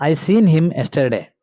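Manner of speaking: usual speaking voice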